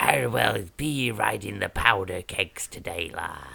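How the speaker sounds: pirate character voice. Asked to do a pirate, the speaker answers in a pirate voice. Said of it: "You know I like doing the pirate voice".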